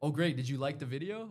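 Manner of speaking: self-assured, proud and pleased, confident tone. Showing how a confident person answers praise: acting proud and confident. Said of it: "a person that's proud of what I'm putting out".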